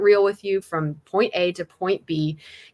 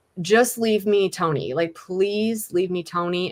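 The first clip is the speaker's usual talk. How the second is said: acted, put-on begging, pleading tone. Retelling how they begged someone earlier: retelling own begging. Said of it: "I was, like, begging him".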